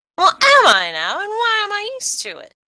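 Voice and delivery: very high, squeaky little mouse voice, shouting. Voicing Dormouse yelling back at her in the story: yelling Dormouse voice. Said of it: "who's like yelling at her".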